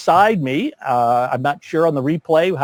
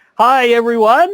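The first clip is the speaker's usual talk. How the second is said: very high, big, booming host voice; 9 semitones higher, 6 dB louder than usual. A talk-show host greets everyone in a big, loud, booming voice. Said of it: "in my big, loud, booming voice".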